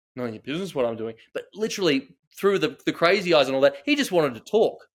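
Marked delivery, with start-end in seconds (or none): 0.1-1.1 dismissive brush-off retort with attitude. Retelling a reply to a stranger at a car window, imitating own attitude. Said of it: "a bit of an attitude".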